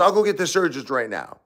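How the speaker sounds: mock snide, contemptuous sarcasm, high sneering. Retelling what a man said in front of the nurses, mock-sarcastically. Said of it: "he was saying it as a sarcastic a-hole".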